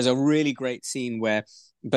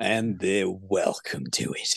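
put-on heavy, hardened Australian accent, low-key; 3 semitones lower, 5 dB quieter than usual. Quoting an old bloke in a film, in a hardened Australian accent. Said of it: "In the most hardened Australian accent".

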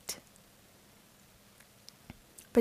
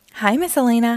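ordinary delivery, nothing marked

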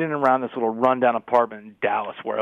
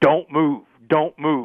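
mock barked, screamed police voice, each word drawn out; 4 semitones higher than usual. Retelling a police raid: imitating a cop screaming at the top of his lungs. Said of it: "he is screaming at the top of his lungs".

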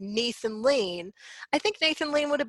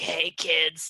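put-on low, old sea hag voice; 6 semitones lower than usual. Telling high school listeners not to take James Corden to prom: sea hag voice. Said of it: "sound like a sea hag being like".

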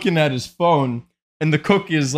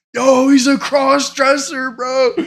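put-on yelling; 9 semitones higher, 3 dB louder than usual. Telling a story about a guy yelling to his buddy at the front desk, retelling a yell. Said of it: "he starts yelling at like his buddy".

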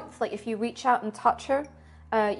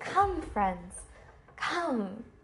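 raised, calling-out voice; 7 dB quieter than usual. Voicing her as she leads the party down corridors, calling out to followers. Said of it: "she'll call to you".

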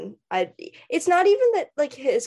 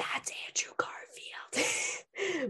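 quiet, very soft hushed whisper; 10 semitones higher, 12 dB quieter than usual. Recalling explaining a Marvel movie to their confused mother: retelling own whisper. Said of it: "I'm whispering to her".

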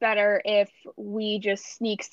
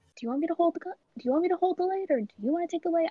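hushed, soft, high half-whispered voice; 8 semitones higher, 5 dB quieter than usual. In a role-play, a character speaks to a companion beside them, half-whispering. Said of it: "I kind of like whisper to him".

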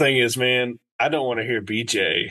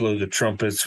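usual speaking voice

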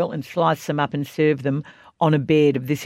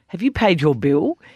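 mock-accusatory, put-on unsympathetic accusing tone; 3 semitones higher than usual. Speaker retells Miss Jane asking about the unpaid bill, in a mock-accusatory tone. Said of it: "In this rather accusatory tone".

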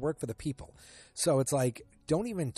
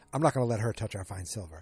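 ordinary talk

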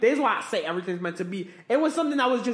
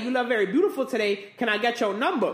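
normal talking voice

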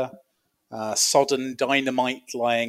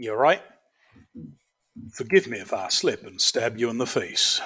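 playful, put-on cowboy character voice; 2 semitones lower than usual. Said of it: "I'll do them all in fun cowboy voices".

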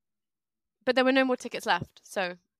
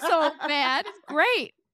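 high, loud fake American accent. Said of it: "I need you to say more things".

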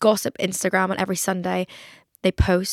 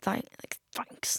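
put-on gritted-teeth voice, much quieter, strained; 4 semitones higher, 12 dB quieter than usual. Recounting her reply to her mum, the speaker retells it through gritted teeth. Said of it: "Like through gritted teeth".

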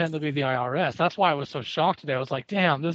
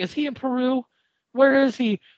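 mock frantic, worried, high, panicked grandma voice; 9 semitones higher, 4 dB louder than usual. Telling a story, the speaker acts out grandma calling his dad, imitating grandma freaking out. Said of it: "Freaking out".

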